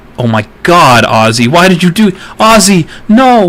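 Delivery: drawn-out, very loud scream, rising in pitch. Reacting to a friend's surprise gift mid-sentence: screaming at people. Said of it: "now I'm screaming at people".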